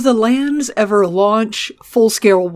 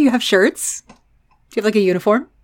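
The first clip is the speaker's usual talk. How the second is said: teasing, mocking tone. Questioning someone about the house they belong to, mocking. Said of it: "I am only mocking you".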